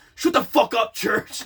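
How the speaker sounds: play-acted, mad, angry outburst. Retelling how Logan got mad: imitating someone angry. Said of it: "Logan got mad at me".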